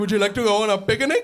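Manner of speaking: put-on muffled cartoonish voice with Sri Lankan accent. Retelling how his dad talks on the phone, as a muffled Sri Lankan Yogi Bear. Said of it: "a butt-dialed Sri Lankan Yogi Bear".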